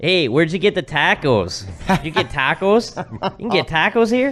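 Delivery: put-on Chicago accent. Retelling what people said at a hockey game there, in a put-on Chicago accent. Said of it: "the Chicago accent is so ugly".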